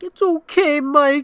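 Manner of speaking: high-pitched, loud, mock tearful little kid crying through. Retelling a finger stick on a little kid, quoting his reply: imitating Ash crying. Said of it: "as he was, like, crying".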